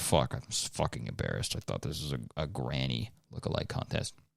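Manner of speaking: mock half-whispered, breathy, annoyed, embarrassed grumbling. Voicing a contestant who dressed as a grandma, imitating an annoyed contestant. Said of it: "He's so pissed".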